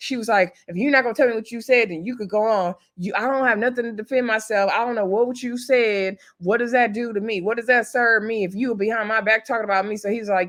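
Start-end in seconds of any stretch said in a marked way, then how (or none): 0.7-10.0 put-on angry ranting outburst. Retelling what she said to him: imitating someone ranting angrily. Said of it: "So she's just going off".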